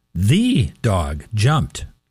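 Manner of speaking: "the" stressed, very slow, with falling pitch. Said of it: "I emphasize each word differently".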